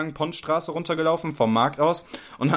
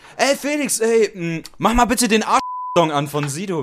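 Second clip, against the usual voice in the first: mock calling out, full voice, very loud, pitched high; 6 semitones higher, 5 dB louder than usual. Retelling the moment, the speaker re-enacts calling out very loudly to Felix. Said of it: "Und ich dann so ganz laut zu Felix".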